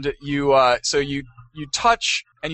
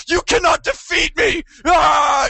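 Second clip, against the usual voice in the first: put-on very high, drawn-out scream; 4 dB louder than usual. Retelling a tense boss battle on a tablet: retelling screaming at a tablet. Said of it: "I just end up screaming at my".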